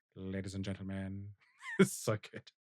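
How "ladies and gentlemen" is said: put-on film-villain voice, deep, very quiet, murmured low. Doing a favorite bit in the Rickman voice: Rickman voice. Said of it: "in the Rickman voice".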